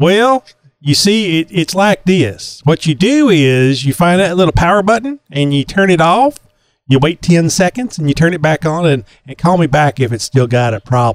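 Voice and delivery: put-on Texan accent. Showing off different accents while giving instructions: Texan accent. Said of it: "I could go into my Texan".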